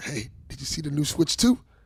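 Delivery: put-on whispered voice. Retelling a question to a kid at work: imitating own whisper. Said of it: "So I whispered to him".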